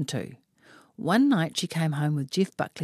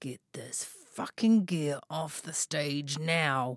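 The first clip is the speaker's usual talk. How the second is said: slow, menacing, threatening voice; 5 dB quieter than usual. Retelling what the stage manager said up close, in a mock-menacing voice. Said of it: "said in a menacing voice".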